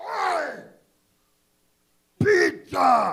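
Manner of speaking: put-on very loud, raspy, rough drunken yell. Acting out someone eating pizza at a party: imitating a drunk guy at a party. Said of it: "drunk guy eat pizza at a party".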